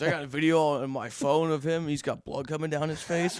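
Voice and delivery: ordinary delivery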